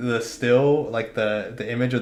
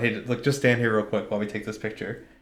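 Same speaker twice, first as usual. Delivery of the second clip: usual speaking voice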